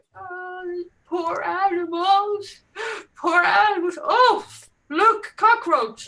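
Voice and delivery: very high, drawn-out sobbing, wailing cry. Retelling how a group member reacted to a cockroach: imitating someone crying. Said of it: "She was crying".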